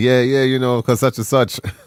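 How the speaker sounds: plain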